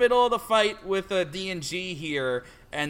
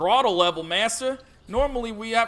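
stock country farmer voice; 3 semitones higher, 3 dB louder than usual. Trying out an announced best impression of a stereotypical farmer; farmer stereotype impression. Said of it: "my best farmer stereotype impression".

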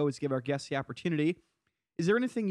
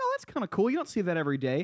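mock intrigued tone, higher; 4 semitones higher than usual. Retelling how a player answered a reporter's question: imitating an intrigued tone. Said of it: "a very kinda intrigued way of like".

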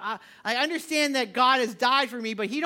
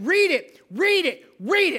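loud, pitched-up screaming; 5 semitones higher, 6 dB louder than usual. Recalling sitting near the Bible, urging yourself to read it; retelling screaming at self. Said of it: "I'm like screaming at myself".

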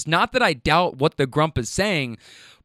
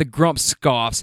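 usual speaking voice

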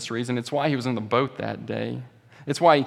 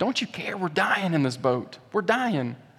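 put-on, frightened, desperate, high, panicked tone; 5 semitones higher than usual. Preaching, speaker acts out the frightened cries to Jesus in the boat. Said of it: "Can you hear the fear in their voices?".

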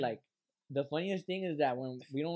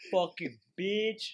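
put-on wild animal-like voice, higher pitch; 5 semitones higher, 3 dB louder than usual. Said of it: "Like a wild animal".

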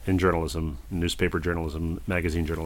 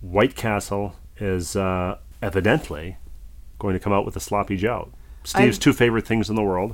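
normal talking voice

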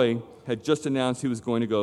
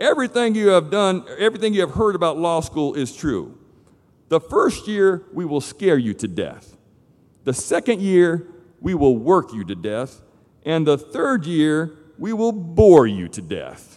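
put-on raised voice, Texas-style country accent; 4 semitones higher, 5 dB louder than usual. Quoting what a man said at Baylor University, in a put-on country accent. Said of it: "that's a country accent I'm doing".

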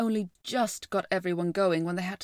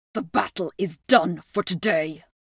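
growling, snarled words; 6 dB louder than usual. Narrator reading a beast's line after the battle at the ford: snarled. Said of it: "snarled the beast".

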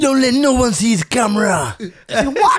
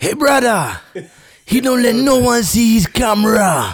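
accent from Haiti; 3 semitones higher than usual. Asked by another speaker to do it again, he speaks in a put-on Haitian accent. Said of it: "do the Haitian accent again".

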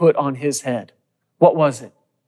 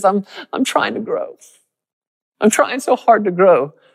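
tearful, stressed-out lament in a crying voice; 7 semitones higher than usual. Speaker acts out a short guy balled up in a corner: imitating someone crying. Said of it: "just stressed out and crying".

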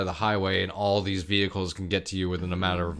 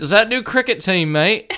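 fake New Zealand accent, very high pitched; 11 semitones higher, 8 dB louder than usual. Joking about New Zealand shirts, in a put-on New Zealand accent. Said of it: "Nailed that accent".

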